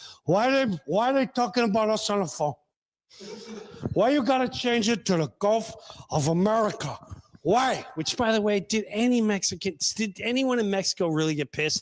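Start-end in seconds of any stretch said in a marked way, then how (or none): 0.2-7.8 put-on, movie-style Cuban accent. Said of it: "Al Pacino trying to be Cuban".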